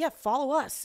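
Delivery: normal talking voice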